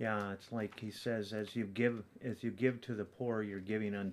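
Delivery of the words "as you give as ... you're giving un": plain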